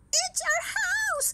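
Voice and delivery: very high, loud, shrill squeaky mouse voice. Narrator reads the mother mouse's line, in a squeaky mouse voice. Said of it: "squeaked the mother mouse".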